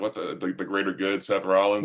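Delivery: ordinary talk, nothing marked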